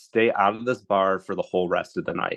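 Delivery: ordinary talk, nothing marked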